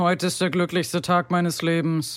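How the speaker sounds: mock deadpan, utterly dry, flat monotone. Imitating how a man in interviews always talks: dry monotone delivery. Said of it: "er redet immer so. Total trocken, monoton".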